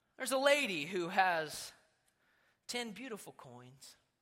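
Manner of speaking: very low, soft, solemn voice. Retelling what Jesus says, the speaker does a Jesus voice. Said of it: "This is my best Jesus voice".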